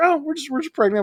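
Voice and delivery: mock offhand casual tone. Imitating a couple casually mentioning their pregnancy: imitating a nonchalant tone. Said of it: "so very, like, nonchalant about it".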